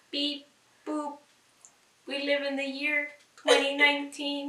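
stiff, mechanical, flat robot monotone. Doing a dare to talk like a robot: robot voice. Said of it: "you gotta talk and act like a robot".

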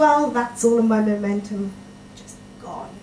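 ordinary talk

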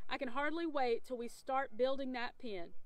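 plain

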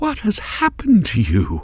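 very high whisper. Narrator reads a queen staring at a broken window: whispered. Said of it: "she whispered".

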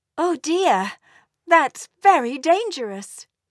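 worried, fretting tone. A mother answers her son's plan to fetch a dragon's egg, anxious. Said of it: "said Mummy Elf anxiously".

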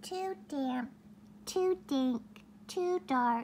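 tiny, high, squeaky mouse voice. Reading a story aloud, voicing the mouse's line: squeaky mouse voice. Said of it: "Mouse squeaks".

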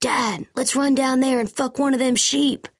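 very high-pitched, thrilled, excited voice. Telling a joke about a father and son, quoting the son: imitating an excited son. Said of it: "the son gets all excited and says".

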